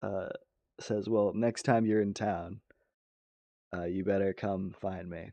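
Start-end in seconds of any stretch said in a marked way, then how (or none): 1.1-5.3 coy, blushing, bashful character voice. Voicing a blushing bartender at a table game: in character, smiling. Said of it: "with a big ol' smile on her face".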